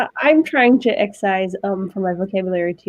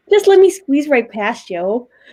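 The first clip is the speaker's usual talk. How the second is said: put-on Great Lakes regional accent; 3 semitones higher than usual. Showing how people up there talk, in a mock Great Lakes accent. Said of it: "They call that the Great Lake accent".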